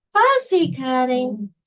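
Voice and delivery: put-on, slightly whiny tone. Describing a friend's catchphrase about fussy cutting: imitating a friend's whiny tone. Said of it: "She says it a little bit more in a whiny tone".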